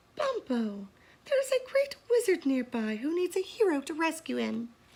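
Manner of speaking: put-on high girlish young girl voice. A parrot suddenly speaks to bumpo in a high voice like a girl. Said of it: "began to talk in a high voice like a girl".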